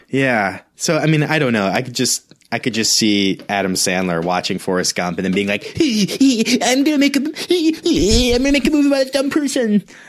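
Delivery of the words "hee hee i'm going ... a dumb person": very high, silly, goofy put-on comic voice. Imagining a comedian watching a film and reacting: Adam Sandler voice. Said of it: "sound exactly like that Adam Sandler voice".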